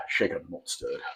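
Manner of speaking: low, soft, clumsy bad British accent. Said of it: "He has the worst British accent I've ever heard".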